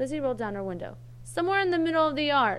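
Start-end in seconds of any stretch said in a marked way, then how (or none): 1.2-2.6 drowsy, sleepy, high and raised. Lizzie rolls down her window and calls out, sleepily. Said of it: "she called out sleepily".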